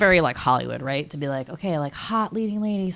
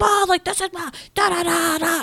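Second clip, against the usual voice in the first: play-acted, shrill, very high yelled burst of nonsense syllables; 12 semitones higher, 4 dB louder than usual. Imitating an actor yelling at a co-star in a movie: imitating Dustin Hoffman yelling. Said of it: "yelling at, uh, Morgan Freeman".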